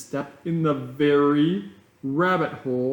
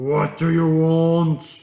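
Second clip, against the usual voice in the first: loud growling voice, "want" drawn out; 5 dB louder than usual. The lion king speaks to the arriving elephant: growling. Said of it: "he growled".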